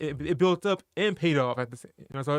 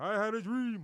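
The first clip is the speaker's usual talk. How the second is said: pitched-up speech-making voice, projected from the diaphragm; 6 semitones higher, 6 dB quieter than usual. Joking about having a deep voice: Martin Luther King voice. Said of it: "I'm like a Martin Luther King".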